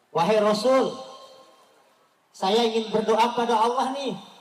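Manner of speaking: put-on speaking with Betawi accent. Telling a story of the angel speaking to the Prophet, in a Betawi accent. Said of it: "Nih ceritanya bahasa Betawi nih, kayak ginilah logatnya".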